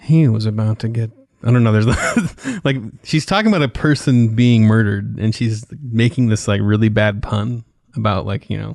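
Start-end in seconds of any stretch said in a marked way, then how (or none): 0.0-1.1 smoky, teasing, sassy, sultry narrator voice. Complaining about crime shows that drive you crazy, mimicking their narrator: sassy, sultry narrator voice. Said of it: "sassy, sultry woman to do the voice".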